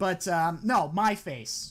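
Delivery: ordinary delivery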